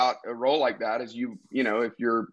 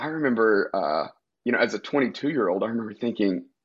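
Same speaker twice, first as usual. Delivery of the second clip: plain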